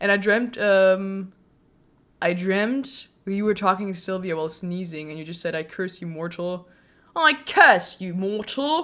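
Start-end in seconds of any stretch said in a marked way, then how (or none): 7.2-8.8 thick, heavy, laid-on put-on British accent. Retelling a dream where the listener spoke while sneezing: heavy British accent. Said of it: "In a heavy British accent".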